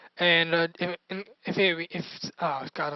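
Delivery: stuttering. Narrating their own game as it plays out; stuttering. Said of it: "I'm stuttering like I I'm stuttering".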